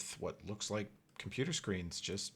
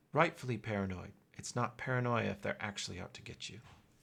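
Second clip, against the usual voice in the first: put-on youthful, quick, very young woman character voice. Narrator voices a hidden woman answering from behind a wall, very young woman's voice. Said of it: "you hear a very young woman's voice go".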